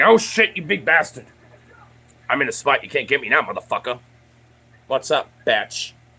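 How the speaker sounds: jeering, taunting pet voice. Voicing the pet Loki taunting the other pet from a safe spot: voicing a pet taunting. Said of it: "He's like".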